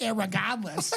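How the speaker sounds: slow Boston irregardless with the r dropped. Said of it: "that's like the Boston thing".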